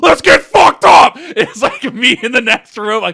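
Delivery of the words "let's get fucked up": put-on high-energy hyped-up yell, higher and louder. Retelling arriving at a friend's dorm: imitating own hyped-up shout. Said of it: "I was so high energy".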